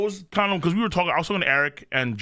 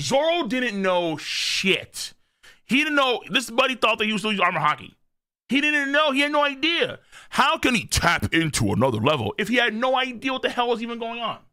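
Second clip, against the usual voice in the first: high, heated, fired-up yelling rant; 6 semitones higher than usual. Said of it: "I'm yelling at Chad about Zoro".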